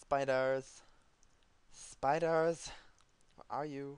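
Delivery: loud, high-pitched, silly, belted youtuber voice. Looking for spiders to kill: Tobuscus-style silly voice. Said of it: "He does that voice way better than I do".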